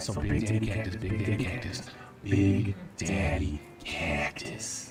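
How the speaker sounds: auto-tuned effect. Repeating a nickname after being asked again: auto-tuned voice. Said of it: "your voice sounds so sweet when it's auto-tuned".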